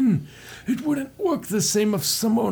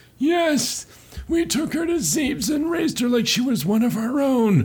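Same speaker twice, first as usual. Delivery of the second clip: put-on wheezing old-timer voice; 3 semitones higher than usual. Answering whether the survivor was Samus, voicing the Chozo reply in a wheezy old man voice. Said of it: "Fine, I'll do like wheezy old man".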